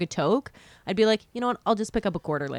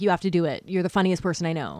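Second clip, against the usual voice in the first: put-on forceful, aggressive, pushy insistence; 3 semitones lower than usual. Retelling what a brother kept saying about comedy: imitating someone aggressive. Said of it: "I'm making him sound very aggressive".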